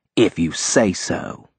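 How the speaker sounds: sarcasm, stretched out lazily in a slow drawl. Minerva, the secretary, answers Raymond as he dismisses her, drawling sarcastically. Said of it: "Minerva drawled sarcastically".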